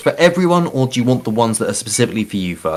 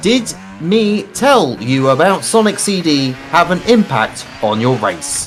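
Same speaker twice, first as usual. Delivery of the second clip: ordinary talk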